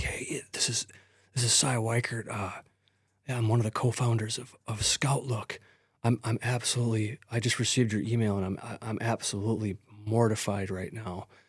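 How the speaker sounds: quiet half-whispered voice. Retelling a company co-founder's phone call, imitating Cy Weichert half-whispering. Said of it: "and he's whispering".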